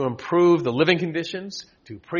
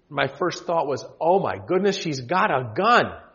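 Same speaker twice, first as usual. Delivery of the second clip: usual speaking voice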